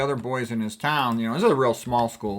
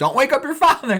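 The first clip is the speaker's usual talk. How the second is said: put-on, very high, raised, cross and angry voice; 14 semitones higher, 7 dB louder than usual. Retelling what the mother said when mad at the kids: imitating a mad mother. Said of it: "if she was mad at us, she would go".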